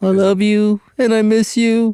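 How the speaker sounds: put-on very high, tearful drunk sobbing. Retelling what a drunk woman said to him, imitating her drunken crying. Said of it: "She's crying".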